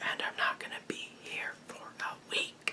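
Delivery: very quiet, soft, hushed whisper. A vlogger giving viewers a channel update, whispering. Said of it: "I don't know why I'm whispering".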